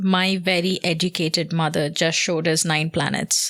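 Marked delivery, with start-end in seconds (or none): none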